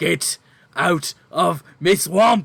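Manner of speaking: very loud, booming, growling, drawn-out ogre monster yell. Narrator voicing an ogre at two climbers, ogre yelling. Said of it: "you just hear it yell".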